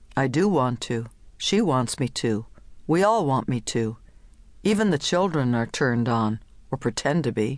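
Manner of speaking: ordinary delivery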